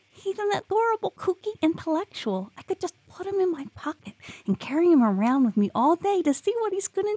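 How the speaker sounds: very high, squeaky chipmunk voice. Reading Maxine's line to Jilly as she drops back into the chipmunk voice. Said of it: "dropping back into the chipmunk voice".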